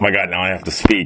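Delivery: ordinary talk, nothing marked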